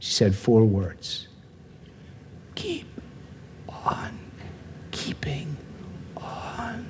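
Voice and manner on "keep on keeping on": barely-there, very slow, drawn-out whisper. Repeating the four words a woman in bed said to them, mimicking her low volume. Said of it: "at this level of volume".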